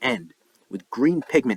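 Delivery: plain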